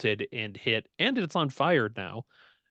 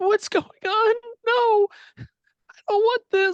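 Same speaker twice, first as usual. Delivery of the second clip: put-on very high, very loud, terrified, panicked girl scream; 8 dB louder than usual. Voicing a girl the players hear in their minds: panicked girl screaming. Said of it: "a panicked girl's screaming".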